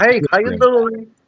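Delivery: put-on Canadian accent. Imitating another person's greeting: imitating b a's canadian accent. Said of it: "you got the Canadian accent".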